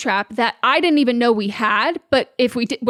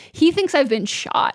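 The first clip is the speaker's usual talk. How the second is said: ordinary talk, nothing marked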